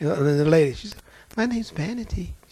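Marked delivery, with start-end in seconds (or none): 1.4-2.3 put-on sweet, demure voice, higher and quieter. Recounting the demon's answer through a woman: imitating a sweet, demure voice. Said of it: "She sounded just as sweet and demure".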